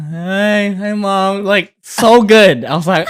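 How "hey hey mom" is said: put-on groggy, drowsy voice, stretched-out hey. Retelling how she answered her mom's call: imitating a fake sleepy voice. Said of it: ""I'm sleepy" voice I've ever heard".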